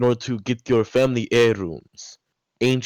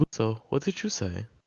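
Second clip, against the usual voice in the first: soft whisper under the breath; 7 dB quieter than usual. A character whispers a question to Gluzo, whispering. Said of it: "He like whispers to Gluzo".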